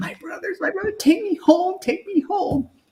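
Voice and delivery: mock weeping, very high, sobbing and begging. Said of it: "I'm crying".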